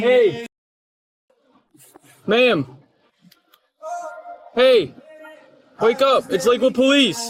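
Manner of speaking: loud, high-pitched yelling.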